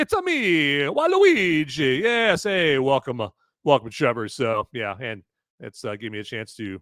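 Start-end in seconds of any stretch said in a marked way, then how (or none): 0.0-2.8 bad, loud, swooping, sing-song, stretched-out voice. Announcing Trevor and greeting him in a terrible Mario impression. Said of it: "demonstrate my terrible Mario impression".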